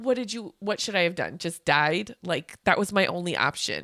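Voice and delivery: ordinary talk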